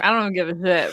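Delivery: ordinary delivery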